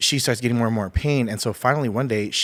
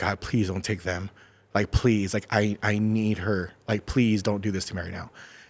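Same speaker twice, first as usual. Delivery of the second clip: tearful voice, crying through the words. Recounting praying while the doctor calls for a blood type, retelling a tearful prayer. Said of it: "I'm there and I'm crying, I'm praying".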